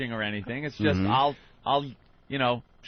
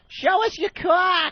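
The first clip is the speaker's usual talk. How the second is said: thick, horrendous put-on Massachusetts accent, very high; 5 dB louder than usual. Retelling what women in a parking lot yelled: horrendous Massachusetts accent. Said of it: "it was the horrendous Massachusetts accent".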